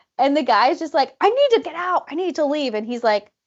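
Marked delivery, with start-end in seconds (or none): 1.2-2.8 frantic, pitched-up, urgent insistence. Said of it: "starts yelling at the dad".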